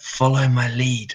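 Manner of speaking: whispered under the breath, muttering. Retelling a scene, the speaker quotes what they told Rod: retold under-breath whisper. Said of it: "I sort of whisper under my breath".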